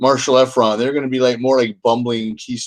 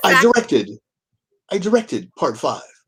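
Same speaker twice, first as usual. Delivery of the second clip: put-on halting, stilted actor voice, pitched higher; 5 semitones higher than usual. Continuing the bit, speaking as the actor: William Shatner voice. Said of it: "say it in Shatner's voice".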